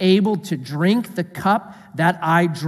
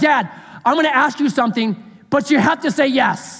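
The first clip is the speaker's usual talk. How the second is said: put-on eight-year-old kid's voice; 7 semitones higher than usual. Retelling how an eight-year-old asks a parent for something: imitating Myron asking for something. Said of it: "my eight-year-old who's like".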